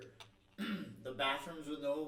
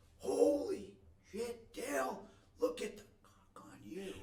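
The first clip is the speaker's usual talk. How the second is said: put-on drill sergeant yell, very high and shrill; 11 semitones higher, 4 dB louder than usual. Retelling what the drill instructor yelled at boot camp: imitating a drill instructor yelling. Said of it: "our drill instructor starts yelling".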